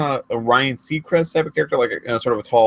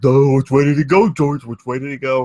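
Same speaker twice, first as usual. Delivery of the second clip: stock dim-witted voice; 4 dB louder than usual. Describing how a big guy in a show sounded: stereotypical dumb guy voice. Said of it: "the stereotypical dumb guy voice".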